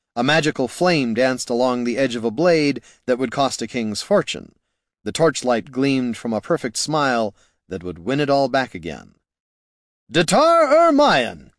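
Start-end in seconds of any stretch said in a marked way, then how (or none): 10.2-11.4 very high, ringing shout. He shouts again as he strides into the room, shouted. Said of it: "he shouted again".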